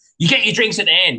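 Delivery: yelling. Retelling what she yelled in the deli queue: imitating someone yelling. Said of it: "she yelled at me".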